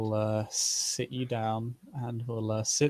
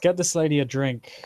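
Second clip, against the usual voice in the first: raised, authoritative, commanding voice; 4 semitones higher, 6 dB louder than usual. Narrating a scene, the speaker voices a man snapping his fingers at a servant: commanding order. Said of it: "that sounds very commanding".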